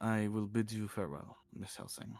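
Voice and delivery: put-on speaking with a French accent. A roleplayer's character bids a woman farewell, in a French accent. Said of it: "he's French now".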